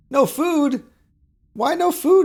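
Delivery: exaggerated, very high, loud, squeaky squeal of concern.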